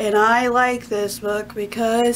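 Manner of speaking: slow, droning monotone audiobook narrator voice.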